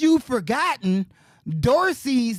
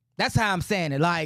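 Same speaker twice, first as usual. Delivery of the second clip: ordinary delivery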